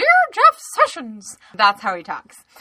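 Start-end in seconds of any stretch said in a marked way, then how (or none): 0.0-1.4 squeaked out way up high. Act out a man from California addressing his letter to Jeff Sessions in a Mickey Mouse voice. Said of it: "he talks like Mickey Mouse".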